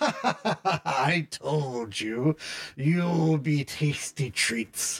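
cackling put-on voice. Narrator voices Imre as Illyria falls, Imre cackling. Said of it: "imre cackles and says".

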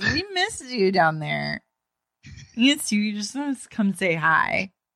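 mock, high, slurred blackout-drunk talk. Retelling what a blackout-drunk Amy said: imitating Amy's drunk slurring. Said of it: "She's slurring".

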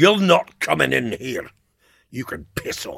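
put-on broad, thick Scottish accent, loud and swooping. Retelling how he stopped you at his house after the pub, in W.S. Graham's thick Scottish accent. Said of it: "he said in his thick Scottish accent".

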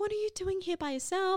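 high, hushed half-whisper. Retelling what a woman beside them at a bar asked, imitating a half-whisper. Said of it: "She kind of whispers in my ear".

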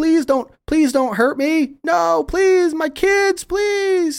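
high, loud, tearful sobbing. Voicing a terrified scientist begging not to be hurt: crying and sobbing plea. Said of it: "he's just kinda crying and sobbing".

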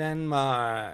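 flat, unenthused, reluctant, bored, dragging delivery. Doing impressions of countries, Denmark says its name: imitating someone bored. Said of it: "Like, really doesn't want to be there".

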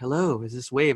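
hushed, secretive, barely audible half-whisper. Retelling how a radio caller greeted the station: imitating a caller half-whispering. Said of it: "he'd be whispering".

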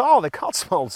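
friendly put-on Canadian accent. Retelling what the canadian man seated beside them said, in canadian accent.

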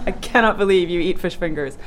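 ordinary delivery

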